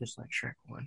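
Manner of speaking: barely audible, very quiet near-whisper. Adding to a joke about Shrek Two being a masterpiece: very quiet response. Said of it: "That was the quietest response I've ever heard".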